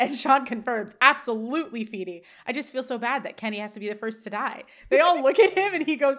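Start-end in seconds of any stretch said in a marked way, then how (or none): none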